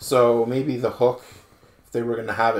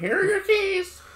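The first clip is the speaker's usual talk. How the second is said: put-on parrot voice, higher. Repeating the parrot's line back: parrot impression. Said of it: "that's what he sounded like".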